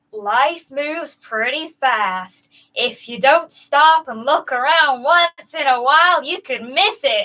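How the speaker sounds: slow put-on American accent. Asked by another speaker to read the quote slowly: slow American accent. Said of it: "Just read it slow in an American accent".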